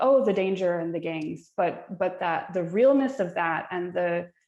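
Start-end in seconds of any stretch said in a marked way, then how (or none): none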